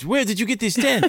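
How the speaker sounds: imitated French accent. Retelling what a group of Canadians at the beach asked: imitating a French accent. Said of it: "in French accents".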